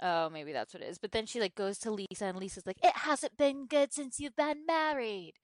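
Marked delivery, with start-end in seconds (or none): 2.8-5.2 put-on English accent, pitched slightly higher. Recapping a TV episode with a co-host, Lisa impression, English accent. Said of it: "That's my really great English accent".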